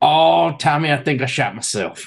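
put-on Cajun accent, losing control. Retelling what Danny said to Tommy amid the shooting, in Danny's little Cajun accent. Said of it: "in his little Cajun accent".

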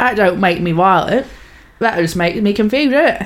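slow, hard, heavy cockney hard-man voice. Imitating how a prisoner talks after the other speaker describes it: cockney hard man Charles Bronson voice.

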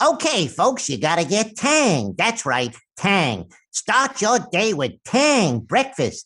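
high-pitched, swooping cartoon rabbit voice. Recalling a childhood commercial: Bugs Bunny voice. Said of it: "that Bugs Bunny commercial, which was like".

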